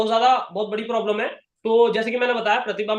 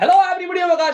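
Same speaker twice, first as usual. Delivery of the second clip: put-on eager, energetic salesy voice, pushed energy; 7 semitones higher, 5 dB louder than usual. Recalling how he used to open his greeting: put-on energetic offer voice. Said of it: "मैं ऐसे करके बोलता था".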